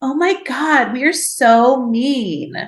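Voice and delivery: mock derisive sarcasm. Recounting a nurse mocking the speaker's overheard phone call, imitating a nurse's mocking. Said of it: "she's like mocking".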